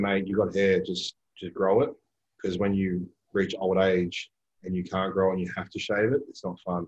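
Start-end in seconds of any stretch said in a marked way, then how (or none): none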